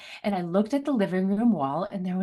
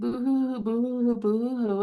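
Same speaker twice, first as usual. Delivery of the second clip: put-on childish boo-hoo sobbing, little-kid crying; 3 semitones higher than usual. Retelling being sent to their room by their mother at age three; imitating crying as a child. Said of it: "and I'm like crying".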